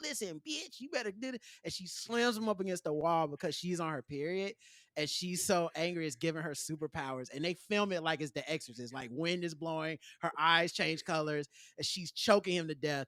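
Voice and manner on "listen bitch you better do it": hushed pimp character voice. Recounting a scene from A Different World, imitating a TV pimp. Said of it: "this pimp who's like".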